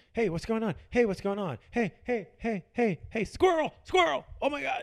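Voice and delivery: very high, loud, excitable yapping, bouncy. Acting out own behavior when going out, like the dog in Up. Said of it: "I'm like the dog in Up".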